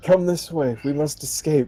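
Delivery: whispering. A voice from nowhere calls another player to escape, whispering. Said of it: "I'm going to whisper to him".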